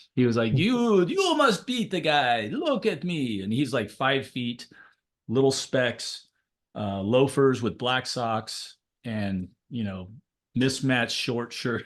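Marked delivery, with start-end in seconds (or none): 0.6-3.5 clumsy, put-on, high, swooping Romanian accent. Recalling the man you trained with for years, do a bad Elias impression, Romanian accent. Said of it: "a really bad Romanian imitation of his accent".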